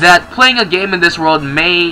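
ordinary delivery, nothing marked

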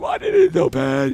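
odd, goofy, silly put-on voice. Player trying to snipe an opponent in a game, weird silly voice. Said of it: "that was a weird voice".

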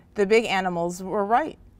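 ordinary delivery

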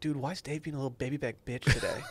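barely-there, hushed half-whisper, very quiet. Retelling what someone said on walking into the lab: imitating a half-whisper. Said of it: "he just kinda whispered".

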